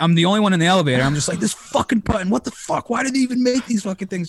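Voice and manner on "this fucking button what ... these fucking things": mock raging, high, furious scream. Retelling getting stuck in a hotel elevator: imitating his own screaming. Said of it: "Just screaming to myself".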